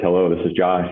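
dull, level, flat monotone delivery. Retelling answering a call at the office: retelling own monotone voice. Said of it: "my little monotone voice".

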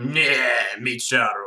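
complaining tone in nonsense gibberish speech. Imitating Zote complaining in gibberish: imitating Zote complaining. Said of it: "when Zote is complaining and he's like".

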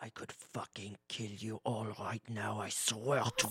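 whispering. A player's character speaks to three companions in the game, whispering. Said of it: "I whisper to my three compatriots".

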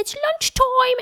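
put-on little child's British voice. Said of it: "she has occasionally a little British accent".

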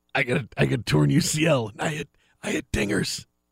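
raspy, hoarse voice. Doing a joke voice about a torn elbow: raspy voice. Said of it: "he's got a raspy voice".

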